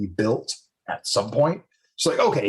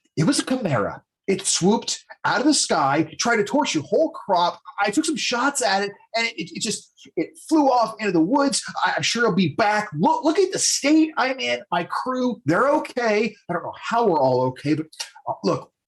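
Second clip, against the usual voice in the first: high, agitated, heated arguing tone; 9 semitones higher than usual. A storyteller voices an elven woman in a heated discussion; heated argument. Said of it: "they're in a very heated discussion".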